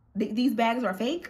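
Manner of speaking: ordinary delivery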